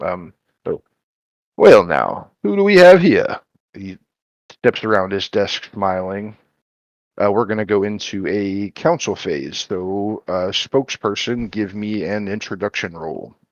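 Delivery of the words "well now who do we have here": put-on mayor voice, very high, loud, booming, swooping. Voicing the mayor greeting the party, mayor character voice. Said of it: "I'm trying out a voice".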